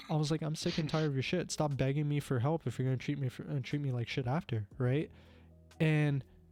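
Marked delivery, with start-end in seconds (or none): none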